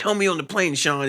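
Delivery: angry high-pitched scream. Describing a favorite film scene, retelling how she screams at Sean. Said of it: "she screams".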